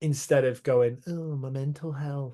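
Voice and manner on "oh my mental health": soft, drawn-out, put-on mocking voice. Mocking how an imagined person would avoid a hard problem, in a put-on mocking voice. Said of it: "I don't know why I'm saying it in that voice".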